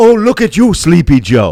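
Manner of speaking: high, loud, mocking put-on voice with taunting tone.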